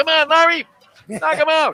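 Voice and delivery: very loud, very high yelling. The speaker acts out the listener yelling in the corner with money on it: retelling a yell from the corner. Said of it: "you're yelling in the corner".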